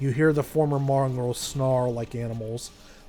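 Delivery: ordinary delivery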